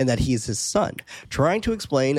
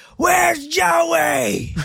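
acted-out very high loud calling yell, name stretched; 6 dB louder than usual. Retelling a movie scene where the gang drives away: imitating Bodhi yelling. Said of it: "as Bodhi yells out for Jo-".

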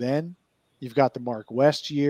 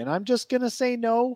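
little light sing-song lilting tone; 11 semitones higher than usual. Answering the next listener question, saying the answer with a little lilt in the voice. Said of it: "I did that with a little lilt in my voice".

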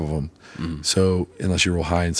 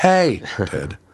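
put-on yell, higher pitch; 4 semitones higher, 3 dB louder than usual. Voicing a Screaming Skull shouting at enemies: mock shouting. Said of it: "just shouting".

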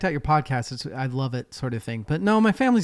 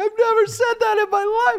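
acted very high bawling, wailing sob; 5 dB louder than usual. Telling how an embarrassed woman ran upstairs, the speaker imitates her bawling. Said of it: "she's like bawling".

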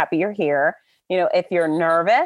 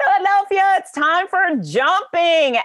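mock very high, rousing announcer bellow; 12 semitones higher than usual. The race announcer acts out his own call to the people at the race, retelling a bellow. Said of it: "So I bellowed".

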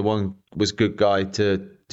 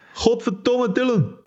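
Belgian-accented scream, much higher pitch. Showing how his own name should be screamed: with a Belgian accent. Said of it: "scream my name with a Belgian accent".

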